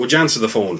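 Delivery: ordinary talk, nothing marked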